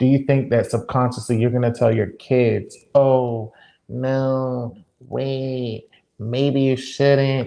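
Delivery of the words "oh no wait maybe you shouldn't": very slow delivery with long stretched "no". Asking about raising kids, imitating the other speaker's voice. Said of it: "Was that an imitation of me?".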